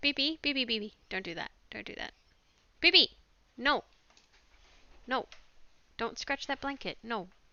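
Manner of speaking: very loud, repeated, scolding yell. Mid-video, breaking off to stop someone scratching a blanket: yelling. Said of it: "what the heck I'm yelling about right now".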